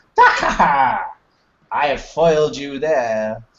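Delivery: words spoken through laughter. Game master voicing a woman at the back, laughing. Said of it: "this woman at the back laughing".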